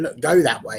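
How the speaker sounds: ordinary talk, nothing marked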